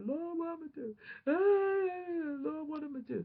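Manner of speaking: very high, slow, drawn-out wailing, crying voice. Retelling praying alone in a room after bad news: retelling crying to the Lord. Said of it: "I'm just boohoo crying".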